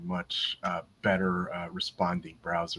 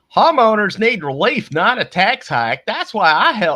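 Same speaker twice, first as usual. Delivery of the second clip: put-on very high, very loud, booming Southern accent; 16 dB louder than usual. Reading a politician's tweet aloud, making up an impression: Southern accent impression of Timmy Knutson. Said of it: "I'm throwing a Southern accent to him".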